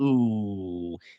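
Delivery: disapproving "ooh" sound.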